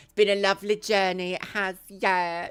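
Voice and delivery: sarcastic-sounding tone. Talking to viewers on a first live stream, sounding sarcastic. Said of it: "that sounded really sarcastic".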